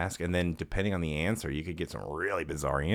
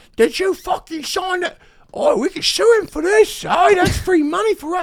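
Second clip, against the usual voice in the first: drunk-sounding, shrill, loud, high put-on British accent; 13 dB louder than usual. Acting out an imagined drunk mother, the speaker uses a put-on British accent. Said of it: "She's got a British accent".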